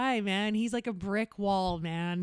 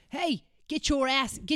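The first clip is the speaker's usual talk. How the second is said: put-on New York accent, pitched higher; 5 semitones higher than usual. Telling of busking in Times Square, the speaker imitates someone in a New York accent. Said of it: "The New York accent?".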